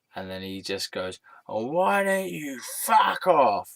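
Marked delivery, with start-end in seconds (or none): 1.5-3.7 high, shrill, very loud, drawn-out shouted outburst. Recounting how a man answered their sarcastic remark: retelling a really loud yell. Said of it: "Really loudly".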